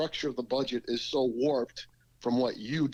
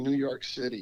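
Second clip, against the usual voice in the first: normal talking voice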